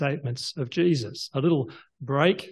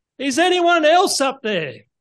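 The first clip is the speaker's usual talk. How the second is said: loud, very high calling shout, projected far; 12 semitones higher, 6 dB louder than usual. After a long silence, he calls out to anyone above in a loud calling voice. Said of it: "in a loud voice".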